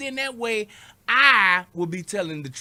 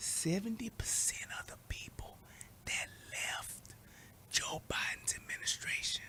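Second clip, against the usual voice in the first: very quiet, breathy, secretive whisper; 17 dB quieter than usual. Telling listeners something they shouldn't repeat to anybody: whispered. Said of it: "I'm gonna whisper this".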